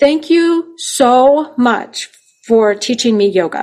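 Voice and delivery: slow, tearful, heartfelt, acted-out crying voice. Retelling a man's thanks after a Rotary Club talk, imitating a crying man. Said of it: "And he's crying".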